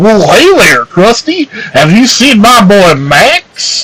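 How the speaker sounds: silly cartoon-character voice. Asked by friends to show off the voice, a friend does the Goofy voice. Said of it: "[name] has a good goofy voice".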